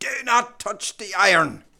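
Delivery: put-on strong, heavy west of Ireland accent, high. Retelling grandmother speaking to them as a child, strong west of Ireland accent. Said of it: "in her strong accent says".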